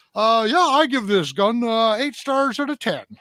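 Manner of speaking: very high, loud, lazy reviewer voice. Mocking gun reviewers who only unbox before reviewing: imitating a lazy gun reviewer. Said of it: "exactly that voice".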